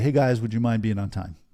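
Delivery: lacking confidence. Showing how a non-executive asks the team to be on time, non-executive tone. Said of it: "if I'm saying that as a non-executive".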